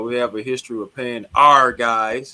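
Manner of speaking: stress on OUR. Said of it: "emphasis on the R".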